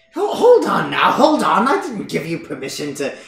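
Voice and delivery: nagging, indignant, high, loud and swooping. A game master voices Morgantha following the players upstairs, nagging at them. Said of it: "[name] begins following after you guys, and she's like, / She's kind of like nagging at you for like invading her house as you two continue up the stairs".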